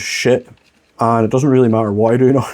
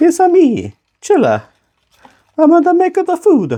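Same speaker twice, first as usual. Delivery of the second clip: very high-pitched, sing-song, put-on Italian accent. Cooking video host greeting viewers in a high-pitched mock italian accent. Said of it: "so high pitched in Italian there".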